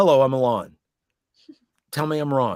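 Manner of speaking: talking lawn character voice. Showing the others their own voice for the lawn: voice of a talking lawn. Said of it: "here's my voice of the lawn".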